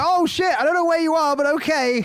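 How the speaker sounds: very high-pitched, mocking tone. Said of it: "He's like".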